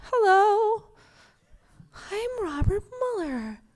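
papery, delicate voice, high and slow. Imitating Robert Mueller speaking at a briefing: papery, delicate Robert Mueller voice. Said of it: "kind of papery and lovely".

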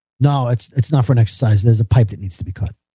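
acted deadpan, dry, straight-faced and low. Retelling a literal reply to a joke: imitating a straight-faced reply. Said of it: "with a straight face".

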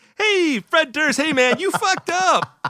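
very high, bright, cheery, slow, chipper voice. Teasing the other speaker about how they read the lines, mimicking a chipper reading. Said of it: "Chipper, man".

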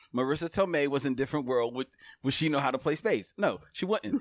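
ordinary talk, nothing marked

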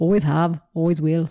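put-on low-pitched Scottish accent. Quoting an intense line from the movie Braveheart, in a Scottish accent. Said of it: "That's a pretty good accent".

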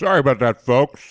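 speaking with mouth full of food. Apologising to listeners while eating, talking with food in the mouth. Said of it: "As you can hear, I've got shit in my mouth".

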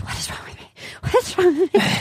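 acted whispering. Retelling a scene where he whispers to himself: imitating someone whispering. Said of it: "And then he whispers".

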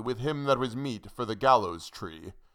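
ordinary delivery, nothing marked

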